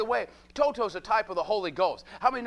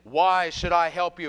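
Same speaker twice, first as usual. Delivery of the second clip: huge, thundering, big booming voice; 4 semitones lower, 4 dB louder than usual. Retelling the Emerald City throne room scene, the great voice answers the travelers: Wizard of Oz booming voice. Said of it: "this big booming voice says".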